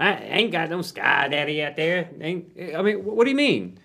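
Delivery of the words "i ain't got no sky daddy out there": mocking put-on accent. Speaker mimics online atheists in conversation, in a mock angry atheist Twitter accent. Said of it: "Angry atheist Twitter".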